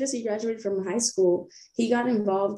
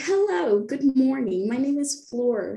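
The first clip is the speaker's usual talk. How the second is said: slow, put-on code-switched voice; 4 semitones higher than usual.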